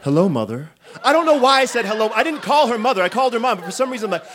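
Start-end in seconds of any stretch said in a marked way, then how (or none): 0.0-0.7 put-on spooky horror-film voice, higher. Retelling turning around slowly in a dark closet: imitating a creepy horror-film line. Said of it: "I turn around slowly like a horror film".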